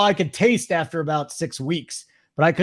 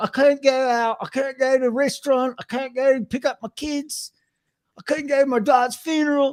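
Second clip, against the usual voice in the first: bad put-on English accent, high pitched; 8 semitones higher than usual. Retelling what a guy in England on a YouTube show said: awful English accent. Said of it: "that's an awful accent".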